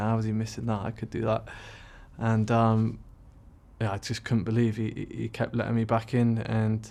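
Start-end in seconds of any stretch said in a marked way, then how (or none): none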